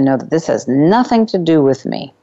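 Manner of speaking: ordinary talk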